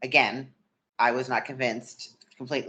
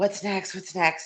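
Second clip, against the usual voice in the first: eager, keyed-up, excited, pitched-up voice; 8 semitones higher than usual. Retelling asking a coach what comes next: imitating own excited self. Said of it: "I was super excited".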